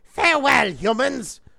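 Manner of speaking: furious robot villain voice, high, loud raging snarl. Narrator voicing Starscream as he turns back into an aircraft, raging Starscream voice. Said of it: "Rages Starscream".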